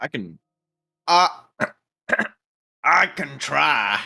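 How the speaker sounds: very slow European accent, drifting toward cowboy. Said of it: "That was so much more cowboy than".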